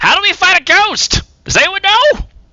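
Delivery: very high-pitched loud shout. Narrating a game scene, Blue Eyes, still tied by a rope: Blue Eyes shouting. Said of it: "just shouts".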